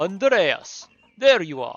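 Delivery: loud, uncertain attempt at a Polish accent. Voicing a character in a scene, attempting a Polish accent. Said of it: "I don't know how to do a Polish accent".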